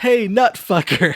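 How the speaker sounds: loud, high voice, sounding like a bad overdub. Retelling a movie scene, imitating Clara's poorly dubbed line. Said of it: "You hear Clara in poorly dubbed A D R say".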